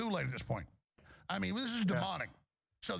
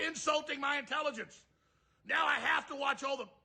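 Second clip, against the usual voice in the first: furious angry rant, pitched higher; 6 semitones higher than usual. Ranting at a woman about her lies: angry ranting. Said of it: "he's so mad".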